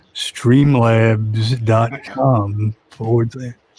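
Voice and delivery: slow, deliberate, carefully paced read-out. Reading out a web address as a joke: saying it slower. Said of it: "I'll do the Streamlabs, like, slower".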